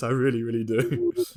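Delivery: put-on smug tone. Teasing a friend who wants a shiny Dunsparce, echoing him: mock-smug imitation. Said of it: "you smug git".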